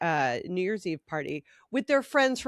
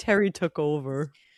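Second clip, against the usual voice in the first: mock dejected whine, lower; 4 semitones lower than usual. Retelling how she reacted as a kid: imitating a sad-sack voice. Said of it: "all sad sack".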